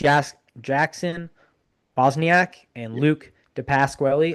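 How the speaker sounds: deliberate, careful pronunciation of names. Praising a team's grit, the speaker names two players, saying names slowly and carefully. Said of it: "I had to say it slow".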